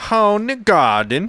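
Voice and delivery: put-on German accent. Friends take turns trying out German accents, in a mock German accent. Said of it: "I wish you had that accent".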